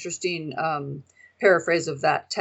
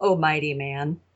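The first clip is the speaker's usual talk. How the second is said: sarcastic, mocking; 2 semitones lower, 3 dB quieter than usual. Reading a verse aloud to the group: sarcastic.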